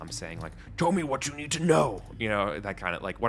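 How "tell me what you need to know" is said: put-on loud, rough-edged, pitched-up orcish accent. Game narrator voicing a voice the players hear, in an orcish accent. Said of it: "like with a orcish accent".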